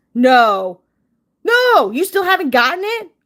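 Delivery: high, surprised, shocked yell close to the mic. Hearing someone still never got a pre-ordered package, yelling. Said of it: "I'm yelling right in the".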